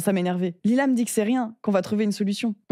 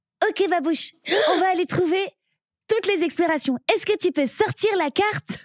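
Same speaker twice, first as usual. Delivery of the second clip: put-on very high-pitched cartoon girl voice, pitch way up; 9 semitones higher than usual. Showing the other speaker she can do Dora's voice, Dora voice. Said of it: "je sais faire la voix de Dora".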